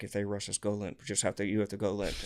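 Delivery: mock mutter, low volume. Retelling what Caleb muttered while arguing with cops: imitating Caleb muttering. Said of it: "he's, like, muttering to me".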